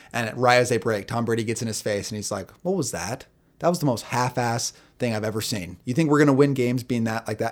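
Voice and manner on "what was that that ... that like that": ordinary talk, nothing marked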